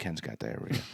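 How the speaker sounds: very soft, breathy whisper. Retelling how a friend told the band a secret: imitating a whisper. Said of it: "John goes and whispers to them".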